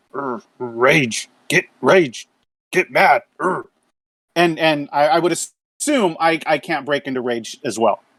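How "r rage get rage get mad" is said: quiet whisper to oneself. Voicing Braun, who pauses from sharpening his axe: whispering to himself. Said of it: "just kind of whispers to himself".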